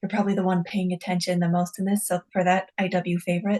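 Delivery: whispering in a character voice. Voicing a character who thanks a guard, then whispering. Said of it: "And then whispers just like".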